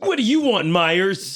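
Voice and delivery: put-on very high, loud tough-kid bully voice. Acting out a school scene, the speaker plays a sitcom kid villain.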